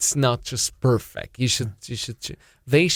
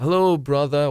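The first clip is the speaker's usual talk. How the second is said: put-on authentic-sounding, convincing Russian accent; 3 semitones higher than usual. Retelling how a man sent to a Smolensk village greeted a local, good Russian accent. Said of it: "with a very good Russian".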